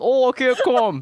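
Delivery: very high Brooklyn dude voice, bro style. Describing how straight guys talk, doing an impression of a brooklyn straight man. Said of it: "that's my impression of a straight man in Brooklyn".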